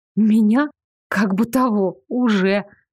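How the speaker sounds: ordinary delivery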